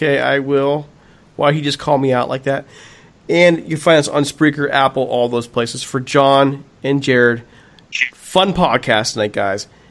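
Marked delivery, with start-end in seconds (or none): 0.0-0.9 mock tentative, doubtful, hesitant and unsure. Teasing a co-host by repeating his reply, imitating an unsure reply. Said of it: "You sound so unsure of yourself right now".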